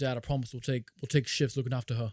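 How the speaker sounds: put-on fake British accent. Redoing the son's line to his dad, in a put-on British accent. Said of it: "Been funny if it was like a British accent".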